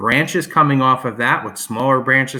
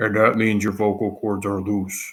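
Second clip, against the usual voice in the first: really deep voice, much lower; 4 semitones lower, 4 dB quieter than usual. Showing how loose vocal cords sound, speak in a really deep voice. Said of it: "your voice gets really deep".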